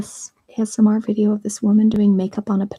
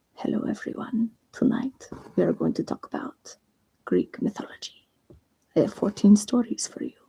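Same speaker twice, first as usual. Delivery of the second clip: put-on soft hushed whisper with French accent; 9 dB quieter than usual. Telling others about an ASMR listen, act out the host's opening in a French Whisper voice, French accent. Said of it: "If they have a French accent".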